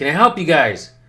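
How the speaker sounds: loud, snide, condescending talking-down tone. Showing the tone that people use when they don't want to help: imitating a condescending tone. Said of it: "when you use that tone".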